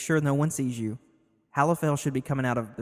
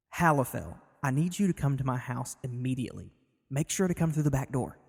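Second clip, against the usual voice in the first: quiet, soft, calm voice. Lorik speaks into Halifel's mind through magic, quiet, calm voice. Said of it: "real quiet, calm".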